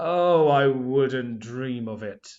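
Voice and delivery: deep, very slow villain voice, words dragged out. Reading Scar's line aloud for a lesson on vocals in drama, deep slow Scar voice. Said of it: "deepening my voice. My pace of speech was slower".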